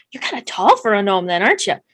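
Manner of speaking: quick, rattled-off aside. Elbowing Geisen in the scene, the speaker voices Grelda's quick sotto voce aside. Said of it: "in like Grelda's Sato voice, so like it's real quick".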